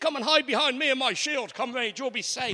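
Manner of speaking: bold, brisk, protective-sounding delivery. The speaker imagines Captain America offering shelter in a battle: brave Captain America voice. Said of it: "in his nice, brave American voice".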